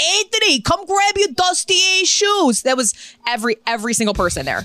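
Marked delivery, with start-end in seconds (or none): 0.0-2.6 mock, very high, drawn-out New York hollering. Describing a resort in Aruba, imitating a New Yorker screaming at kids across the pool. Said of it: "They're screaming at their kids across the pool".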